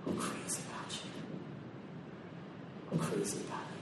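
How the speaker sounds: very soft whisper. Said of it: "whispers in my ear".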